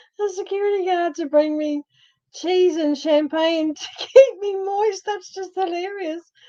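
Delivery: talking through laughter. Repeating an earlier funny remark of their own, laughing while talking. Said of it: "I can't stop laughing now".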